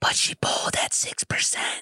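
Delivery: weird, shady, breathy whisper. Retelling Pelosi on Anderson Cooper talking about Kamala: Joe Biden whisper. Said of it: "does the Joe Biden whisper".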